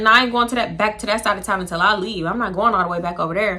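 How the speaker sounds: plain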